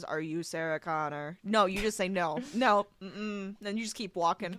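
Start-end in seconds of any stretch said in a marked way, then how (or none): 0.0-1.4 deadpan flat delivery, much lower pitch. Imagining a man like Arnold Schwarzenegger at the door, in a deadpan Arnold Schwarzenegger voice. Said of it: "just like deadpan goes".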